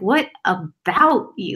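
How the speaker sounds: heavy stress on the word about. Describing how Patrick J. Adams delivered a line: Patrick J. Adams stressing about. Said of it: "the inflection in Patrick J. Adams' voice too was like, what about you? ... really emphasis on the about".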